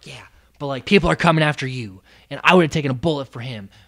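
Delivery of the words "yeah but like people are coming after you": mock whisper, much lower pitch. Speaker retelling what Ro said to them, imitating Ro whispering. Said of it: "And then Ro's whispering".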